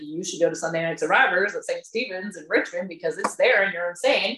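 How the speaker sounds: ordinary talk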